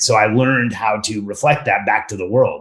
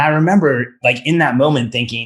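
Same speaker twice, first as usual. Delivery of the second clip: plain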